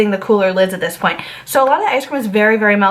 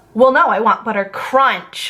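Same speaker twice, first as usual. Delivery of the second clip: play-acted irate, mad, insistent voice. Retelling a customer's angry demand for her ice cream: imitating an angry customer. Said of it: "she literally gets so mad and she goes".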